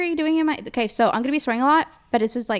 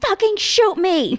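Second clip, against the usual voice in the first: put-on shout, higher and louder; 9 semitones higher, 6 dB louder than usual. Retelling a driveway standoff with a drug dealer: retelling yelling at someone. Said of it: "I'm just yelling at him".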